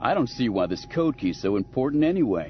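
ordinary talk

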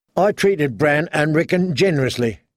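ordinary talk

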